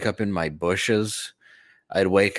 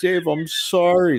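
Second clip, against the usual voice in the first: put-on very high, loud, weepy blubbering sobs; 10 semitones higher, 5 dB louder than usual. Retelling how a crying man apologized to him, imitating a man crying. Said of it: "He's like crying".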